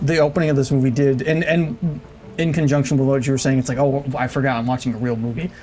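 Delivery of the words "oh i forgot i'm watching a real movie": plain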